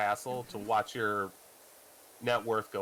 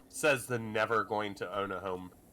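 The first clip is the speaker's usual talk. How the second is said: plain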